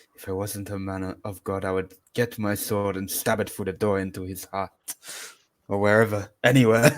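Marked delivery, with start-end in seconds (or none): 0.1-4.7 quiet, grumbling mutter under the breath. Playing a character muttering through the door: muttering under breath. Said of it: "mutter under my breath".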